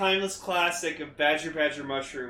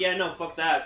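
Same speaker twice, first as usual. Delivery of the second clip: normal talking voice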